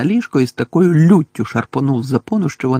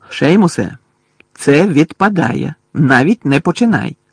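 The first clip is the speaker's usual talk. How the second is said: slower delivery; 2 semitones higher than usual. Narrator reads one boy addressing another in a dormitory dispute, warning. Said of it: "застеріг Рон".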